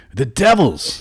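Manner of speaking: high, loud, hissed, disembodied hag voice. Voicing a hag urging the group to fight devils: hissing hag voice. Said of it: "hisses the hag's disembodied voice".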